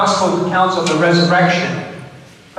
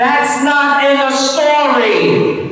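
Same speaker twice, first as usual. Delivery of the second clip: high, slow yelled line. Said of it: "you ought to yell out".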